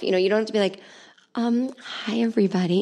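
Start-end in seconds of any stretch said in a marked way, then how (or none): 1.3-2.8 mock soft-spoken talking, higher pitch. Mocking how some yoga people talk: imitating a very quiet voice. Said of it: "The more quiet you talk, the more psycho you are".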